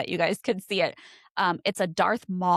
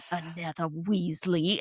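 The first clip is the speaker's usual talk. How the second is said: put-on mutter under the breath, quieter; 4 dB quieter than usual. Retelling what he said under his breath while walking past: muttered under the breath. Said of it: "shook his head".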